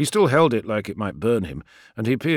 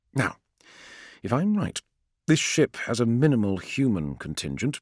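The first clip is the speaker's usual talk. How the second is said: plain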